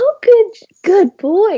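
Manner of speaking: squeaky, very high, drawn-out praising tone. Describing training a dog, showing the tone used with him: high-pitched dog-praise tone. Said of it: "like the the high pitched".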